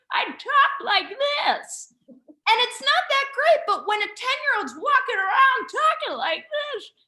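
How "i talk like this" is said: put-on old person voice, much higher and slower. Speaker shows a childhood voice trick when asked, in an old grandma and grandpa voice. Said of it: "Can I hear this".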